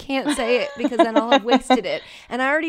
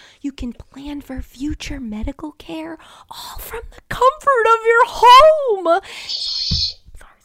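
timid, skittish, fretful librarian voice, pitched up; 7 semitones higher, 5 dB louder than usual. Reading an ad as a librarian afraid of talking too loud who keeps getting excited. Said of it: "as a librarian who's afraid of talking too loud".

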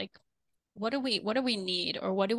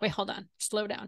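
ordinary delivery

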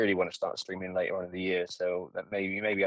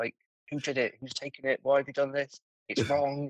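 screaming, higher; 6 semitones higher than usual. Retelling screaming at everyone in a channel: imitating himself screaming. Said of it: "I'm absolutely screaming at everyone in the channel".

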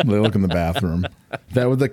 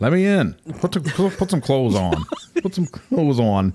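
put-on Midwestern cop accent, slower; 7 semitones higher than usual. Quoting the cops caught on the phone recording: Midwestern cop accent. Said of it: "Those dudes with the Midwestern accent".

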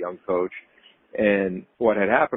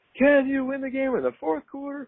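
very high, fired-up screaming shout. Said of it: "he would scream in the locker room".

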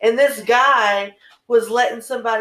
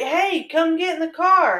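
hollered catcall, pitched up; 6 semitones higher than usual. Retelling being hollered at from a car: imitating a catcall holler. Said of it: "hollered at".

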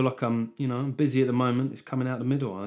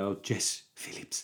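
whispered, slow doting sigh. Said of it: "your choice was probably".

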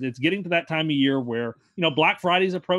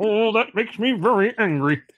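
put-on cartoon Martian voice, much higher-pitched; 4 semitones higher than usual. React to the talk about Doug the Pug with a Marvin the Martian impression. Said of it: "Was that your Marvin the Martian impression?".

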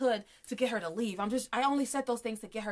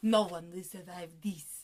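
put-on French accent, lower pitched; 4 semitones lower than usual. Quoting the hitman with his bomb at episode end: imitating hitman in French accent. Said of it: "Nice French accent".

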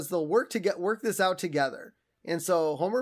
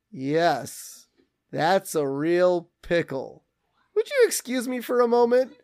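put-on eerie calm tone. Retelling a story, the speaker voices Homer: acting out Homer, eerily calm. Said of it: "eerily calm".

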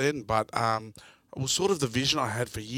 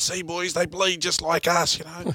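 loud, rousing, raised yell, pitched up high; 6 semitones higher, 4 dB louder than usual. Retelling a teammate's halftime rallying call to the team: imitating Craig Carrington yelling. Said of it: "he's yelling out".

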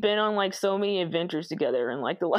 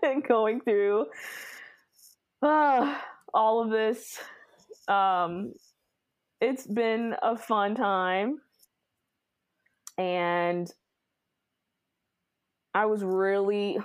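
holding back tears, choked-up, very slow. Thanking a co-host for the podcast and years together, holding back tears. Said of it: "do not start crying".

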